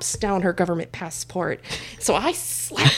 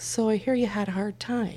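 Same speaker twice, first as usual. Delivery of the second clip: put-on dry, deadpan tone, quieter; 4 dB quieter than usual. Retelling what a NASA executive across the aisle said very dryly; imitating a dry remark. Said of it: "very dryly says".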